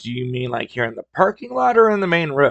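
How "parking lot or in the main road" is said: ordinary talk, nothing marked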